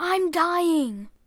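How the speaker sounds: sudden high cry. Stabbed in the neck, Anna cries out: crying out. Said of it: "Anna cries out".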